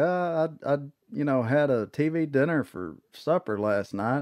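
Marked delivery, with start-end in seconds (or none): none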